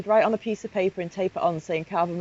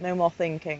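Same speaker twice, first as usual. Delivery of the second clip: usual speaking voice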